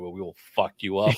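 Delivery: mock threatening tone. Retelling how Cyclops threatens government agencies: imitating Cyclops threatening. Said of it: "threatening government agencies".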